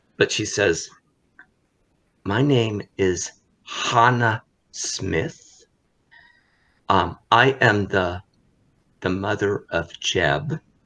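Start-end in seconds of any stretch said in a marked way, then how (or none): 2.2-10.6 speaking in a hush. Game narrator voicing a mother so others cannot overhear: hushed voice. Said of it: "her voice gets hushed so that they cannot hear".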